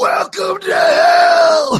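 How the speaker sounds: very high, loud, over-the-top shout. Imagining the villain line done big like in Death Warrant: imitating Patrick Kilpatrick, big delivery. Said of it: "it would have been too big".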